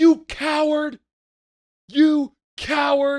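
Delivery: very high, loud, shrill, drawn-out furious scream. Retelling yelling at a driver at a light: imitating screaming at someone. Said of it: "Screaming at him".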